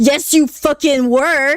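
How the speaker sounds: mock fury, really mad and insistent. Retelling being woken by a friend's mom, imitating someone really mad. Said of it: "really mad".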